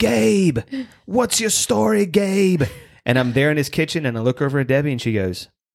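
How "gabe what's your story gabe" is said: put-on very high, slow, crazy Australian accent. Retelling how Dave questioned him in his kitchen, imitating Dave's crazy Aussie voice. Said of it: "Dave goes in his crazy Aussie voice".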